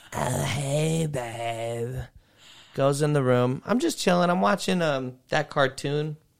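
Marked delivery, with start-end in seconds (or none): 0.1-1.9 put-on raspy voice, babe drawn out. Retelling what the redhead said on arriving: imitating a raspy-voiced redhead. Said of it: "redhead with a raspy voice comes in".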